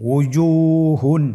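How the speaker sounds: slow, drawn-out, fully stretched word.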